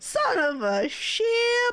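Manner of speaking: silly mock delivery, high, slow and drawn out.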